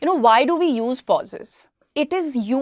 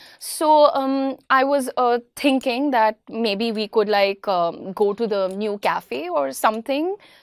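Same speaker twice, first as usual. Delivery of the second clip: hesitant, rambling chatter full of um and uh. Showing listeners how someone who overuses filler words speaks, full of filler words. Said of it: "if I speak like a person who uses a lot of filler words".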